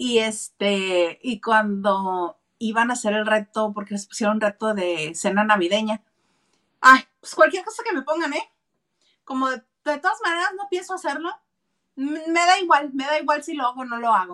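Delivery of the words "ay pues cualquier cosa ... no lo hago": put-on high, irritated, couldn't-care-less tone. Retelling how a contestant talked about the challenge: imitating someone annoyed.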